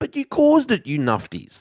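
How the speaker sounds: exasperated, fed-up, frustrated outburst, high and swooping. Criticising the people who caused the problem: frustrated. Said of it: "I'm a little frustrated".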